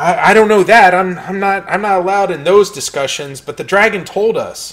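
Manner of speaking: nervous voice. A game master voices a cultist questioned by Gesh and Aiden, nervous cultist. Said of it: "looks kind of nervously at both Gesh and Aiden".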